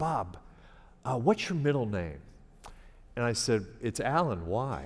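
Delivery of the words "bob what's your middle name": quiet, hushed aside voice. Quoting his news director pulling him aside on his first day, in a hushed voice. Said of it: "in a hushed voice".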